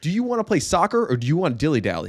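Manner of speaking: sing-song coach voice. Retelling what was said to goofing-off kids at a scrimmage: coach voice. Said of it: "I said it in that exact tone".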